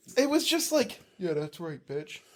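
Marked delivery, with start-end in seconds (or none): 1.2-2.2 muttering under one's breath, quieter. Retelling a taunt said at a passing car: muttered under breath. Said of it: "said it under your breath".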